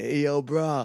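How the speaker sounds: talking like a dude-bro. Acting out how he would really talk, imitating a bro. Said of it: "He'd be like".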